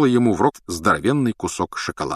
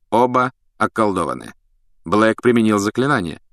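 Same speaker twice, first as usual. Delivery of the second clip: plain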